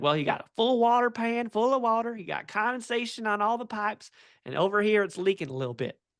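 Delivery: put-on North Carolina mountain accent. Describing a customer's video, the speaker quotes him in a country accent. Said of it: "he has an awesome country accent".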